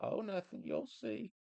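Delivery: put-on grandpa voice, pitched way up high. Retelling what grandpappy used to say: put-on voice imitating grandpappy.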